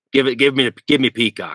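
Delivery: rough, gruff, high-pitched phone voice. Recalling phone calls during a mission, imitating Bert's gruff voice. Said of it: "in his perfect gruff, gruff voice".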